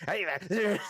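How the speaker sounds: put-on angry kobold voice, shouting. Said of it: "shouting insults at you".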